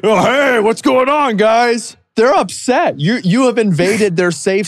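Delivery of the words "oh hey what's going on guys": booming, loud, high, acted-out burst. Imitating a loud man busting into the subreddit: imitating a loud man busting in. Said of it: "big, loud, bald, middle-aged man busting in".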